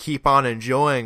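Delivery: ordinary talk, nothing marked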